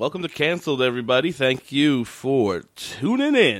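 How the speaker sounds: radio announcer voice. Opening the podcast episode for listeners, in a radio guy voice. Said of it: "I like radio guy voice".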